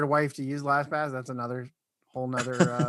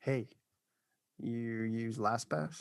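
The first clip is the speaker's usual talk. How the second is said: low, deep seductive voice, much quieter; 4 semitones lower, 7 dB quieter than usual. Demonstrating how to say the line like a turn-on, in a low seductive tone. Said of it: "in a lower tone though... more like deeper".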